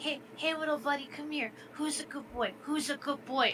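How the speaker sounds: put-on high, soft, cooing baby talk. Describing a friend kneeling down to greet a dog, baby talk to a dog. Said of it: "start to like you know baby talk it".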